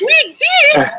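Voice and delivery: mock exasperated calling out.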